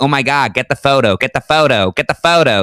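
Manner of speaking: sightseeing American voice. Describing a touristy street, the speaker mimics American tourists, imitating American tourists. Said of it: "a lot of Americans going".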